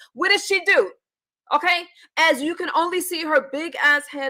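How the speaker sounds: worked-up, fired-up ranting outburst. Speaker calling out a woman shown on the screen, yelling. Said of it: "I'm sorry, I'm yelling".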